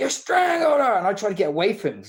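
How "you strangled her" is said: very high, loud, shrill scream. Retelling how an attacker came running in: imitating someone screaming. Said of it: "He come running in screaming".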